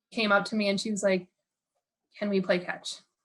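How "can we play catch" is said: put-on panicking, nervous girl voice. Retelling a tiny girl asking to play catch: imitating a panicking girl. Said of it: "panicking and, like, sh-, hands shaking".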